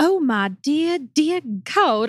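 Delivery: slow, drawling Southern accent. Trying the line for the group, pretending to melt, as a melting Southern Belle. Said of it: "pretend like you're melting".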